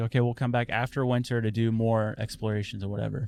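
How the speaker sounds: ordinary talk, nothing marked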